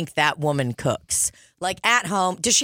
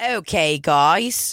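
imitated Australian accent. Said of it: "That was Australian, wasn't it?".

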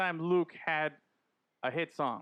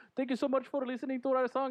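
put-on high-pitched Indian accent; 8 semitones higher than usual. Retelling what guys said in a promotional video: imitating a stereotypical Indian accent. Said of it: "typical, stereotypical Indian guy".

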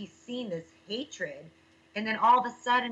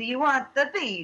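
fake-sounding, put-on Italian accent; 3 semitones higher, 4 dB louder than usual. Recalling an email request for an Italian accent, the speaker uses a put-on Italian accent. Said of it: "a like an Italian accent, so like I came in there like".

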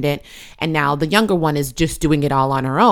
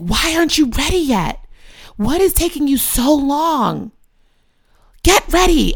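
very high-pitched, furious, angry yelling; 11 semitones higher than usual. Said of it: "And I'd be yelling".

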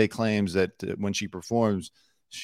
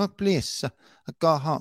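put-on Spanish accent, pitched up; 7 semitones higher than usual. Mocking a public figure's put-on accent: imitating Hilaria Baldwin's fake Spanish accent. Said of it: "if you're gonna do the fake Spanish accent".

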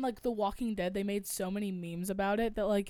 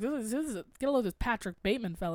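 plain

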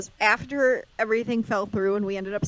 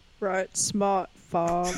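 put-on Maine accent; 3 semitones lower than usual. Asked by the podcast host for her best accent, doing a Maine accent. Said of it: "what's your best main accent?".

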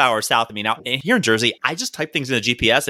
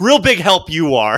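put-on sarcastic, dismissive, scornful old-lady voice; 4 semitones higher, 4 dB louder than usual. Retelling an old lady's snide remark at a car window: imitating an eye-rolling old lady. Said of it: "She then rolls her eyes and goes".

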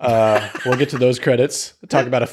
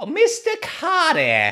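pitch pushed way up, swooping. Explaining how a character talks, doing the Horshack impression, very high. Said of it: "because he says it very high".

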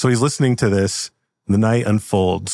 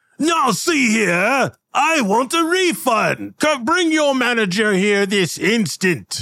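very high, demanding, complaining dwarf voice; 14 semitones higher than usual. A storyteller voices a dwarf customer who has a complaint: dwarf voice. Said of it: "And there's a dwarf, and he says".

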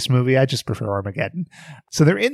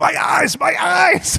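very high, very slow, croaky, strained wail. Retelling how characters in a show go from calm talk to action: imitating someone screaming. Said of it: "they're just screaming".

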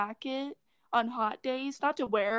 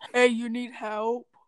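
put-on low-toned woman's voice, louder; 3 dB louder than usual. Describing a woman's voice, the speaker imitates her lower tone. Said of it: "She kind of had a lower".

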